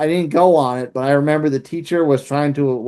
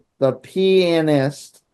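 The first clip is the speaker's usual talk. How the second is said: deliberately slowed, each word clearly enunciated. Speaker announces they will say it slowly: slow and careful. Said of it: "I'll say it slowly".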